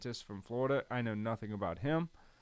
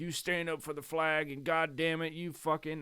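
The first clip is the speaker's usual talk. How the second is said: stern, hard-line voice, pitched up; 5 semitones higher than usual. Speaker imitating how conservative people used to talk, mock-stern conservative voice. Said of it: "I'm just doing a more conservative, stern".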